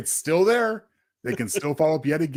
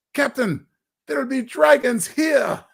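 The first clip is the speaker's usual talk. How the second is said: horrible put-on Scottish accent, very high; 11 semitones higher, 3 dB louder than usual. Addressing John after handing out an award, in a horrible Scottish accent. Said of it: "In my horrible Scottish accent".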